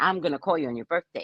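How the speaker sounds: play-acted, combative, aggressive tone of voice. Retelling how he repeated the line again, imitating an aggressive tone. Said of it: "in his aggressive tone".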